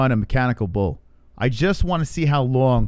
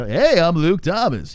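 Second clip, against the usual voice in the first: goofy radio-announcer voice, pitched up, drawled; 5 semitones higher than usual. Imitating how he talks with his co-host: Luke Thomas goofball radio voice. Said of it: "all of a sudden he goes into this goofball radio voice thing".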